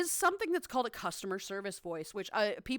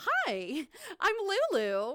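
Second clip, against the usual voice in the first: bright, peppy, high sing-song voice; 8 semitones higher than usual. Speaker demonstrating their customer service greeting: peppy customer service voice. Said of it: "my customer service voice can be very peppy".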